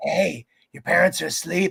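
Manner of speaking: put-on demonic, possessed teddy bear voice. Joking about an AI teddy bear: demon-possessed Teddy Ruxpin voice. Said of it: "a demon inside of him, and he's like".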